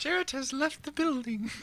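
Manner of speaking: fake British accent with very high pitch. Announcing an absence as the attendance fairy: put-on british accent. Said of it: "A British accent?".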